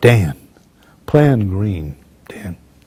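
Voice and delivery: low, ice-cool, composed, unbothered calm voice. Recounting a hectic battle, speaker imitates a man staying calm: ice-cool calm voice. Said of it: "this man is as cool as an ice cube".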